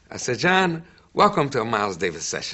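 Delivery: ordinary talk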